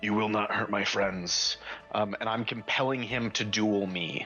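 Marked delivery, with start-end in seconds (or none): 0.0-1.6 hushed whisper under breath. Speaking in character while lifting a longsword: whispering under breath. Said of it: "I whisper under my breath".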